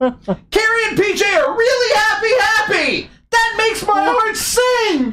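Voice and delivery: screaming voice.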